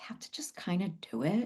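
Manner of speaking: soft, hushed whisper. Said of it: "I'm whispering this to you".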